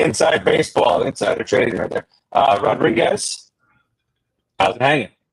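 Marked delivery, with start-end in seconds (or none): 2.3-5.1 odd, otherworldly, transmitted-sounding voice like a distant signal. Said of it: "you sounded like you were talking from the mothership".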